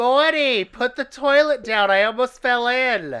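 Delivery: very high, loud, slow drawn-out scream. Suggesting a name for a character: screaming like Sylvia from The Nanny. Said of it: "all I wanted to scream was Sylvia from The Nanny".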